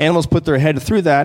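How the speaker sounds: ordinary delivery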